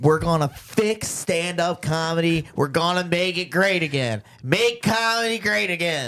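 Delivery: worked-up, fired-up, slow, high oratorical proclamation voice. Speaking to the camera after asking for it to be on: fired up. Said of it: "I'm a little fired up right now".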